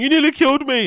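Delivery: whiny crybaby moan. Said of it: "this YouTuber is always crying".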